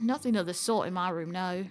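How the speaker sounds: put-on short slip into British accent. Character answers whether her room has a tool to fix the locks, British accent. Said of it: "she was British for a second".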